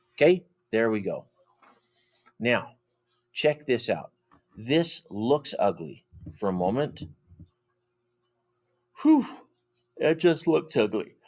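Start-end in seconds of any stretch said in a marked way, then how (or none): 9.0-11.1 spoken mid-sentence through a yawn, pitched up. Working through a math problem for viewers, speaking while yawning. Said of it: "Sorry, guys, I'm yawning".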